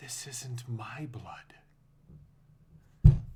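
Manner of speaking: very slow, intimate whisper. Voicing a character who pulls another character close: lover-like whisper. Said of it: "whispers in sort of, like, in the way that a lover would whisper".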